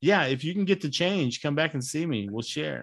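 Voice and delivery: a little sarcastic, dry, tongue in cheek. Retelling a line said to people who look at the bill: imitating own sarcastic remark. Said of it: "I'm being a little sarcastic when I say so".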